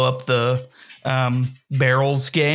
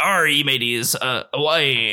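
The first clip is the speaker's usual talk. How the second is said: put-on pirate voice. Describing a character who puts on a pirate hat, imitating a pirate voice. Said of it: "He puts on that pirate hat".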